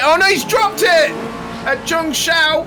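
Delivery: sudden, high, startled, excited and alarmed outcry.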